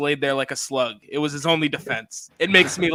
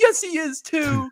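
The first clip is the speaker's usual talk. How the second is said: put-on very high, sad, tearful, drawn-out crying voice; 13 semitones higher than usual. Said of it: "he's all sad".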